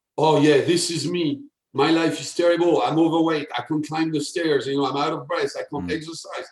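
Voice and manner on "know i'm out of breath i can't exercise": ordinary talk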